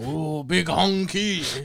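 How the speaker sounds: put-on Japanese accent. Joking about The Last Samurai, quoting a line as Ken Watanabe impression. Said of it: "Ken Ken Watanabe being like".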